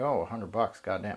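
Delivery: ordinary delivery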